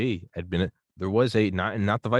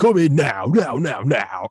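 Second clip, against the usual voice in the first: put-on 2000s radio car ad announcer, higher, louder; 6 semitones higher, 7 dB louder than usual. Imitating a radio car advertisement from the early two thousands: imitating a 2000s radio car ad. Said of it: "car advertisements on the radio in the early two thousands".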